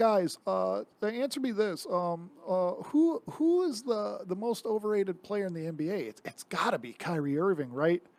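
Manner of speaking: halting, rambling sports-podcast host voice. Mocking a sports podcaster's opinions: Bill Simmons impression. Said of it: "I love how you have a Bill Simmons impression".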